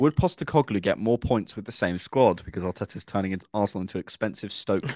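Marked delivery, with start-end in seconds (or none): none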